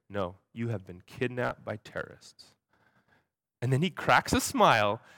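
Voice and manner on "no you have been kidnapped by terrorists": dead straight, totally serious, no hint of joking. Retelling what a man in the van said: imitating someone totally serious. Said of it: "totally serious".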